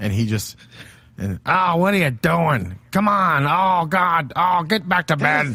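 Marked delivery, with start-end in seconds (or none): 1.2-5.5 put-on angry old man voice, much higher pitch. Giving their own body a voice in a conversation, angry old man voice. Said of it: "My body is just an angry old man".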